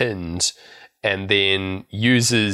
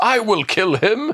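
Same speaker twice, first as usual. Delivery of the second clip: high-pitched, loud yell. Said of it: "main threat that he just keeps yelling is".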